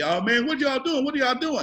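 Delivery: put-on high, blubbering, baby-like crying, pleading tone. Retelling how a man grabbed and slammed by a cop cried out, imitating him crying like a baby. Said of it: "He's crying like a baby".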